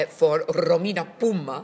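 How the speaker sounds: put-on Italian accent. Presenter announcing tonight's guest previewing her Edinburgh show: Italian accent. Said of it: "That was an Italian accent".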